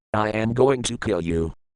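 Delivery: plain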